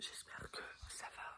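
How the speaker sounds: soft, hushed whisper. Signing off to the audience until tomorrow, whispering. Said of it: "je chuchote".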